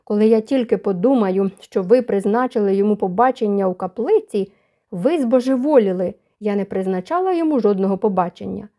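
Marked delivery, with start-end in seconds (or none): none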